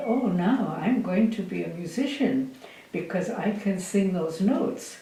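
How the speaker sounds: normal talking voice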